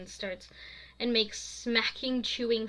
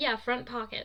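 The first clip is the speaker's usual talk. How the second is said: ordinary delivery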